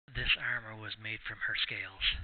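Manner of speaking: secretive, confiding stage whisper. Voicing a character who leans in close to a player: half-whispering in character. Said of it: "leans in and whispers to you".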